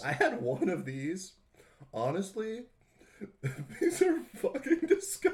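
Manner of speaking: high-pitched speech broken up by giggles. Describing a gross snack while eating it, giggling while talking. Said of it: "you're giggling like a little boy".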